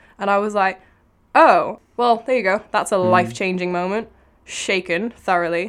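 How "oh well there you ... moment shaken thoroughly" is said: loud, mocking, sarcastic put-down. Recalling reading something in the back of a car: retelling a sarcastic remark. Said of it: "I'm being sarcastic".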